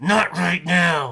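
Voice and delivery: forced out between clenched teeth. Speaker retells how a man answered his request, retelling words through gritted teeth. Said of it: "almost through his teeth".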